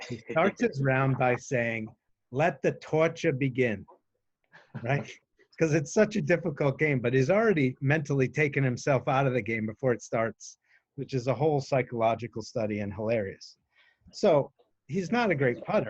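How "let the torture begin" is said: put-on spoken with a Boston accent. Telling a story about their golfer dad, the speaker quotes him in dad's Boston accent. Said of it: "he's got a Boston accent, which you'll hear in a second".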